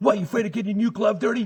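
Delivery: shrill screaming, very high and very loud. Retelling a Little League coach yelling after an error: imitating a coach screaming. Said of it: "my coach starts screaming at me".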